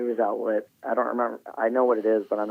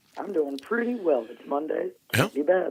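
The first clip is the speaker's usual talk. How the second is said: high, worn-out voice beginning to give out; 6 semitones higher than usual. A caller greets the host on a Monday; voice starting to go. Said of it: "you sound like your voice is starting to go".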